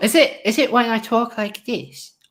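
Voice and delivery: put-on high, babyish little voice. Wondering aloud which voice is the seal voice, baby voice. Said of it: "when I do my baby voice".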